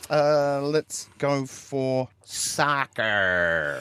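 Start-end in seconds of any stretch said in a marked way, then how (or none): 2.2-3.8 "soccer" said with an American accent. Moving on to the next word, with an American accent on soccer. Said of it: "I don't know why you said that with an American accent".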